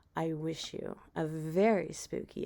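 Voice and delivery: ordinary talk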